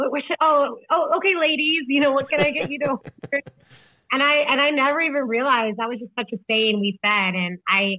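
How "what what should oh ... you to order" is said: thrown-off, flustered, fumbling, pitched-up stammer. Retelling an answer to a table of women: imitating own flustered reply. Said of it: "I was so thrown off".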